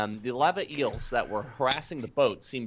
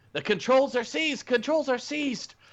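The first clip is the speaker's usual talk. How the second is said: shouting back in a shrill, very high gnome voice. Narrating a game, voicing a gnome who shouts back: shouting gnomish voice. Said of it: "you hear a gnomish voice shout".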